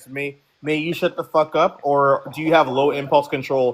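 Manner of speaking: cheeky, sassy tone, words drawn out. Snapping back at a panelist who keeps interrupting: sassy. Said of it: "he's very sassy".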